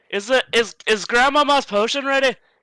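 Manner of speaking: loud yelling, voice carrying far. Character calls to their auntie from across the library, shouting across a library. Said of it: "I'm shouting for you".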